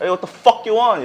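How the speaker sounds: American accent with distinct vernacular inflection. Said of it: "흑인이나 멕시칸 쪽으로 발음을 돌리자".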